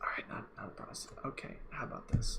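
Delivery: unvoiced, low-volume whisper.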